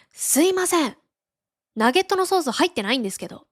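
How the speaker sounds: high, angry, irritated voice. Retelling a customer's complaint after the speaker's own mistake, imitating an angry customer. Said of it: "怒りながら".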